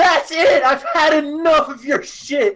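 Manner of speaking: high, loud screaming rant at top of lungs. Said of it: "She would scream to the top of her lungs".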